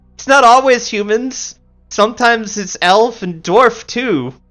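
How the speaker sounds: very high, helpful-sounding voice. Voicing a character who pipes up as if being helpful. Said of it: "Ayana pipes up as if this is helpful".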